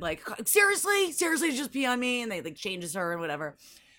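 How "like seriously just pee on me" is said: mock scolding yell, high and drawn-out. Retelling how a woman screamed at a kid who peed on her, imitating the scream. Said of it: "is like screaming at the kid".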